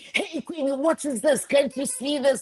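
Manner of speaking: high-pitched mock yell.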